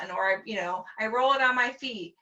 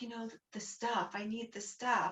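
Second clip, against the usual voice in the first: put-on whisper, quieter; 13 dB quieter than usual. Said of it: "whispering to me".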